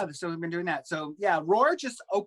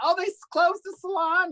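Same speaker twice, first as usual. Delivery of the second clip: very high, chatty mom voice; 11 semitones higher, 4 dB louder than usual. Retelling a phone call with mom: imitating mom on the phone. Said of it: "you're famous for your impression of your mom".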